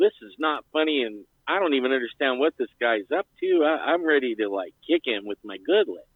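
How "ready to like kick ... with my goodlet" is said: ordinary talk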